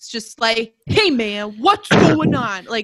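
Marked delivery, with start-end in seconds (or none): 0.9-2.6 put-on New York accent, said loudly. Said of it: "It's like New York".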